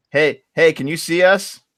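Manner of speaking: high, calling-out yell. Playing a character calling out to a farmer: yelling in character. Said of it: "I'm gonna yell".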